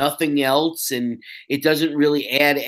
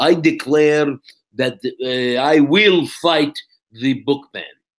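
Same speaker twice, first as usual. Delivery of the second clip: slow, deliberate, put-on Israeli accent; 4 dB louder than usual. Showing off an accent to the other speaker before a commercial, Gal Gadot Israeli accent. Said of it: "that's my Israeli accent".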